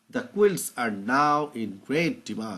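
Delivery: very slow, drawn-out, deliberate reading voice.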